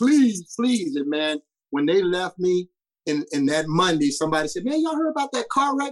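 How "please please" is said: repeated high, raised, desperate begging. Recalling being a homesick kid before a long drive, retelling his begging. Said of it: "And I was begging".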